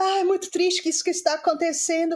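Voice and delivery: pretend sobbing. Mocking people who film themselves crying and post it, imitating someone crying. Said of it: "chorar e se filma chorando".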